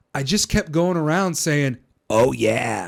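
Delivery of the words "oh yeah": put-on mascot voice, belted out forcefully. Retelling going around off the air: Kool-Aid Man voice. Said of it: "like the Kool-Aid Man".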